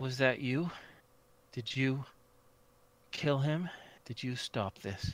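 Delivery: gentle, soft, searching tone. A game master voicing a woman who turns toward the players, soft, questioning voice. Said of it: "says in a soft, questioning voice".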